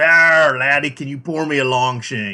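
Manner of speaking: put-on stock pirate voice, loud and slow. Telling a joke, the pirate orders a drink from the bartender, pirate voice. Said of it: "the pirate comes up and goes".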